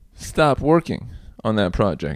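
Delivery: ordinary delivery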